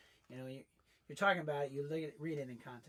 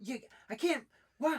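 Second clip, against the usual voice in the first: mock excited, freaking-out kids voice, higher and louder; 12 semitones higher, 8 dB louder than usual. Retelling the kids opening gifts and freaking out: imitating excited kids. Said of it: "watching them freak out".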